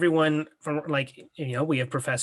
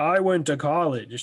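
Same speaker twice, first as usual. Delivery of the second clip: slow, drawn-out put-on cartoon voice; 3 dB louder than usual. Trying out a cartoon impression for the others: Plankton impression. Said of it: "That's my Plankton impression".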